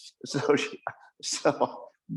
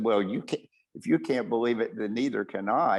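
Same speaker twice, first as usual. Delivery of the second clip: usual speaking voice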